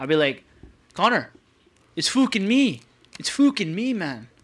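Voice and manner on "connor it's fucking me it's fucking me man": bad, horrible fake Irish accent, pitched up. Speaker imagines greeting his boy Connor, in a horrible Irish accent. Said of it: "such a horrible Irish accent".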